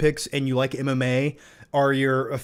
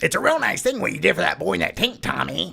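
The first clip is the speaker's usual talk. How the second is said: gritty, grinding, rough, creaky screen-actor voice; 4 semitones higher than usual. Doing an impression from the movie Warrior: Nick Nolte impression. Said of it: "my Nick Nolte impression from the movie Warrior".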